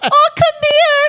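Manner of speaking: very high, loud, doting grandma voice. Describing how a term of endearment felt to her, imitating a grandma. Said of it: "like a grandma being like".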